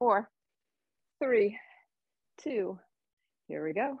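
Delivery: out of breath, winded, breathing hard. Leading a dumbbell exercise and counting down, out of breath. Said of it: "I'm out of breath".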